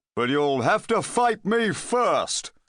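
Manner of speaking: hollow, high-pitched, menacing voice. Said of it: "and [name] saw that the Friday Knight himself was a very small man indeed, or at least he had a very small head. "Sorry," said the knight. "Can I try again?" "Certainly not," said [name], and unsheath".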